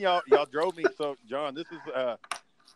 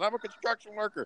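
mock rowdy drunken yell, high; 7 semitones higher, 4 dB quieter than usual. Retelling running up to people in a safety vest: imitating own past yelling. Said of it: "I started yelling".

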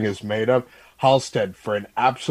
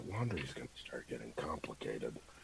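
very quiet, low, hushed mutter under the breath; 9 semitones lower, 24 dB quieter than usual. Voicing a character reacting to suit-care advice: muttering under his breath. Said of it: "just under his breath just go".

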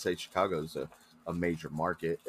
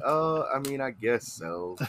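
put-on nonchalant voice, higher pitch; 6 semitones higher than usual. Mimicking how another speaker just answered: imitating Roger's nonchalant way of talking. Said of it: "it's the way he says it".

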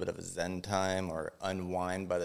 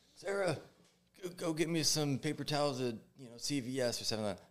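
put-on scream, much higher; 8 semitones higher than usual. Retelling how a doctor yelled at his nurse during surgery, retelling a doctor's scream. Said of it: "he screams at his nurse like".

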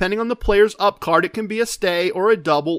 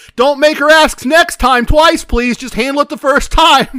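very loud, high, carrying call-out; 7 semitones higher, 9 dB louder than usual. Retelling what someone said at the table: imitating someone saying it very loudly. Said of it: "very loudly says".

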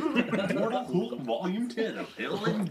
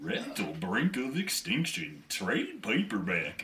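slow, drawn-out put-on hillbilly drawl; 10 semitones lower, 3 dB quieter than usual. Speaker redoes a list of comic titles in a character's voice: slower character voice. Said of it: "he speaks slower than that, so we gotta go like".

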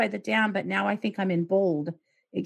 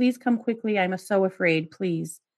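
put-on, mock sobbing, tearful crying plea. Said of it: "she's crying on the phone".

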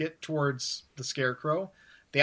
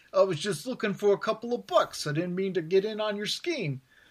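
put-on small-time goon's street thug accent; 4 semitones higher than usual. Retelling how Bruce Wayne poses as a hired goon when caught: low-level thug accent. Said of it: "He even does the accent like".

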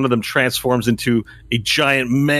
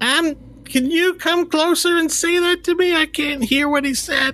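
put-on very high, squeaky old grandmother voice. Voicing a hard-of-hearing grandmother asking to come closer: Grandma Tilly character voice. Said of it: "Grandma Tilly speaks up and says".

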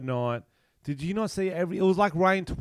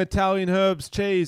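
ordinary talk, nothing marked

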